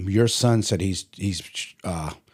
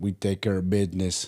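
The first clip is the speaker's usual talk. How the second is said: put-on Russian accent; 3 dB quieter than usual. Retelling what a fast-working closet installer told him, imitating the installer's accent. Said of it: "With his accent".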